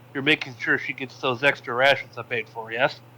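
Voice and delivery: ordinary talk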